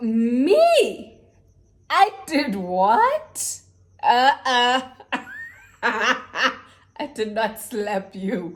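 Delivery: high, slow, laughing, mock-innocent, drawn out.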